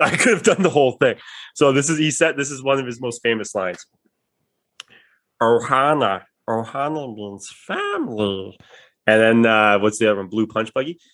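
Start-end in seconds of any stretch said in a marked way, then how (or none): 5.4-8.6 slow, drawn-out cartoon alien voice, pitch swooping around. Showing off the Stitch voice with one of his famous lines. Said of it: "I can do the Stitch voice".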